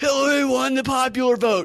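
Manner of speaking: mock very high, yelled, shouted rant. Retelling a man interviewed on the street: imitating a man yelling. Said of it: "yelling, and he's going".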